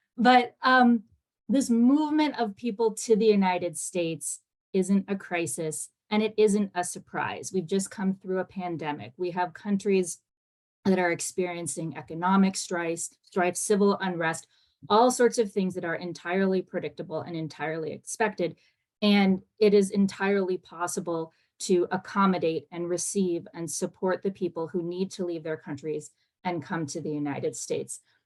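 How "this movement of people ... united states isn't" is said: slightly slowed-down delivery. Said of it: "so I'm gonna try to slow down a little bit".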